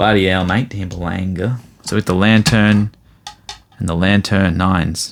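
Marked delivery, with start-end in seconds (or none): 0.0-1.6 Australian-accented voice. Going through graded cards one by one, speaking in an australian accent. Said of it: "Should I talk in like an Australian accent?".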